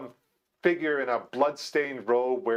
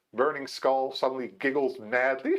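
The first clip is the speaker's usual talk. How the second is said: ordinary talk, nothing marked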